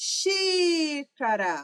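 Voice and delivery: first syllable xi in xícara long and stressed. Lesson on the stressed syllable, xi in xícara drawn out. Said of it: "O xi eu falei por mais tempo".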